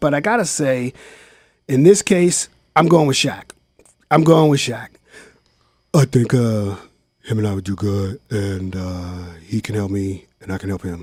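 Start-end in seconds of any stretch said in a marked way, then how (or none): 5.9-11.0 very deep, low-pitched voice. The speaker does a quick impersonation, then asks if it was good: Shaq impersonation. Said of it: "That's my Shaq impersonation".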